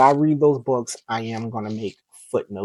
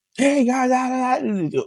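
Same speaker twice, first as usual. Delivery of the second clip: fake loud excited voice, higher pitch; 13 semitones higher than usual. Joking about not being loud, faking a loud greeting: mock loud hyped greeting. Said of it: "I'm not really that loud".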